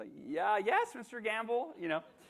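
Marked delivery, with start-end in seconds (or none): 0.3-1.7 very high, drawn-out, slow, squeaky adolescent voice. Retelling answering a man from a radio station as a teen, imitating his pubescent voice. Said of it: "I'm going through puberty".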